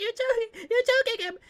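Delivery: put-on very high, shrill, loud woman's scream. Retelling what a woman in a video screamed: imitating a woman screaming. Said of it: "some horrible woman screaming".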